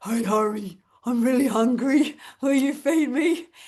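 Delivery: playful dog voice. Retelling asking a child to feed the dog, pretending to be the dog Poppy. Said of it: "I pretend I am the dog".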